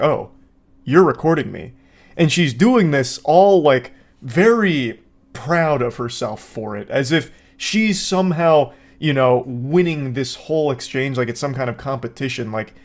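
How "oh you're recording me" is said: put-on surprised, sudden realization tone. Imitating the man realizing he is being filmed: imitating sudden realization. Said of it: "he's ambushed with the realization".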